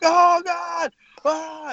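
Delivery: shrieking, screaming cry at very high pitch. Describing a tape of a man screaming, acting out his screaming. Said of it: "He's just like screaming".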